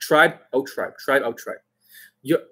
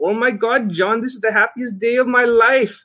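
put-on Indian accent on every word; 9 semitones higher than usual. Retelling what a man said to the speaker, imitating an Indian accent. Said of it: "like he is like with the Indian accent".

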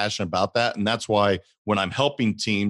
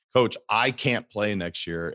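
normal talking voice

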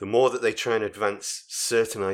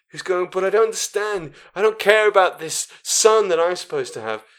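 put-on frightened, helpless voice, high and raised; 10 semitones higher, 7 dB louder than usual. Retelling a film scene, mocking a relatively useless character: imitating a scared character. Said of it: "She's still this scared".

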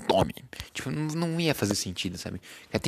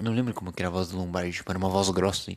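ordinary talk

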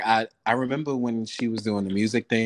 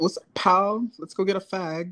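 put-on British accent, very high and slow; 9 semitones higher than usual. Recalling talking daily in a british accent after a show: put-on british accent. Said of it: "I started talking in a British accent like every day".

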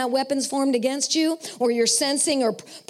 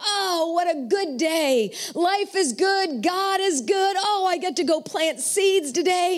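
put-on slow, cheery, delighted farmer voice, drawn out; 4 semitones higher than usual. Acting out a farmer who gets up to plant seeds: imitating an excited farmer. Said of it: "He's all excited and he's singing".

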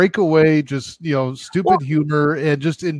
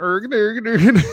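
high, fake Swedish-style gibberish babble; 6 semitones higher than usual. Joking that place names sound like the Muppets, in a Swedish Chef voice. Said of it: "Sound like the Muppets".

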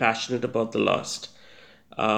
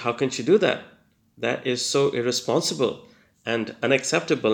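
ordinary talk, nothing marked

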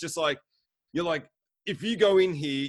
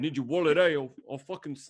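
put-on British London thug accent. Imitating a mugger from British films in a put-on accent. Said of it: "the fucking accent".

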